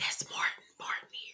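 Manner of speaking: barely audible, very quiet whisper. Retelling a TV episode where one character whispers to another: imitating a whisper. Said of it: "she turns and whispers to Glenn".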